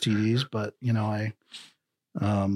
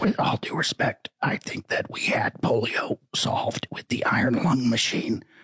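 put-on strained, whispery voice. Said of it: "your R F K impression".

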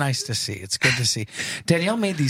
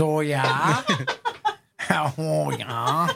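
very slow, drawn-out, sing-song put-on Wisconsin accent; 3 semitones higher than usual. Retelling how she answers a dad joke, in a Wisconsin accent. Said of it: "with her Wisconsin accent".

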